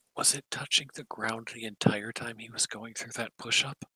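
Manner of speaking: hushed, leaning-in whisper. Voicing a character leaning over to another to ask: whispering. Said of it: "just whispers".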